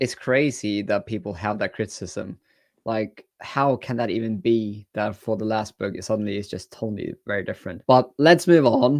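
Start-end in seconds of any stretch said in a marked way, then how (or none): 7.9-9.0 voice cracks, slower pace. A book reviewer on video moving on to the next book, voice cracking. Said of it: "my voice cracked there".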